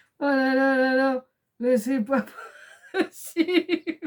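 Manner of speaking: very slow words soaked with giggling laughter. Reacting to a crafting mishap: laughing while talking. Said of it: "je suis obligée de rigoler un coup".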